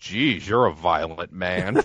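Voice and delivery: low, understated deadpan delivery. Recounting an exchange where Jesse answers Vince, Jesse's mock deadpan. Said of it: "Jesse just deadpans".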